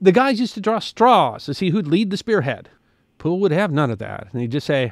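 usual speaking voice

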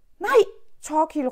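loud shout. As an attacker grabs a companion by the throat, shouting. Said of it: "råbte Stella".

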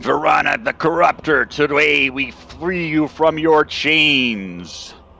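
authoritative, commanding voice, "chains" drawn out. Narrating a lone elven man's declaration amid tormented souls, in a commanding voice. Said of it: "In a commanding voice".

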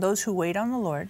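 normal talking voice

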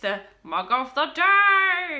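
booming catchphrase voice, very loud, very slow, "day" stretched. Unwrapping a gift and revealing the mug of the day, put-on mug-of-the-day voice. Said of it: "Said in the mug of the day voice".

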